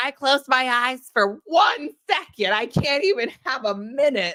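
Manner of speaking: high, slow, drawn-out and deliberate delivery. Retelling a friend waking up on the couch: imitating Monique. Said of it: "And she was like".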